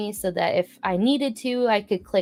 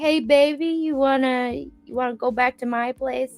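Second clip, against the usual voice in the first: put-on drunk man voice, slower; 5 semitones higher than usual. Retelling a man in a line hitting on the teenage speaker, imitating a drunk man. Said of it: "The man was three sheets to the wind".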